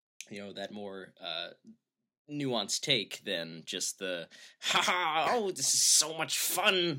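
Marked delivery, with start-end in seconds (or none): 4.6-7.0 happy-go-lucky, cheery, light, high and slow. Mocking an impression of Christoph Waltz: happy-go-lucky Christoph Waltz impression. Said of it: "this happy-go-lucky guy that Taran Killam, his impression".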